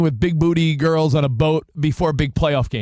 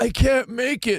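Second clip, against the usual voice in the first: high, fake sick, mopey, poorly voice; 7 semitones higher, 3 dB quieter than usual. Describing someone who wants sick callers to put on theatrics, mimicking one: fake sick voice. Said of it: "a fake sick voice".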